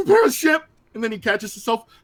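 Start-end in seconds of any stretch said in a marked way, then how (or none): 0.0-0.6 imitated nervous voice, higher pitch. Retelling a favorite movie scene: imitating a nervous movie character. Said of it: "he's like all nervous".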